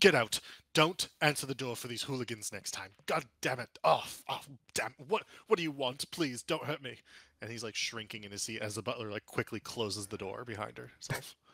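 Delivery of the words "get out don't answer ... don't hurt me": furious, angry shouting, barked out. Narrator voicing a character as the butler lets visitors in: Master Grailhund shouting furiously. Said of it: "he immediately begins shouting at her".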